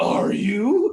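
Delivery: creepy, high voice. Retelling a voice someone heard in the house: creepy voice. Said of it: "I heard it in a bronger, creepy voice".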